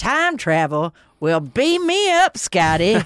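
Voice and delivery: crazy cartoonish Southern accent, slow and drawn out. Recounting a show scene, quoting the character: Wyndham Earl's Yosemite Sam accent. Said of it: "this really crazy, like, Yosemite Sam type accent".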